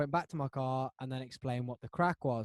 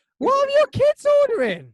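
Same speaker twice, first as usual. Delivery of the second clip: very high, loud, disbelieving cry. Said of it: "Sorry, I got high pitched then".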